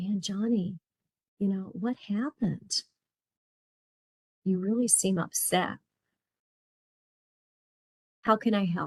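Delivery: soothing, calm, caring, concerned voice. Demonstrating how to ask an upset person open-ended questions: calm, caring voice. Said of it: "that calm, caring voice".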